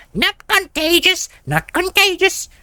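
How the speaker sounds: very high, wild, shrill, swooping street-vendor yell. A narrator reads the peddler's line as he points at himself, shouting. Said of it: "The peddler points at himself as he shouts".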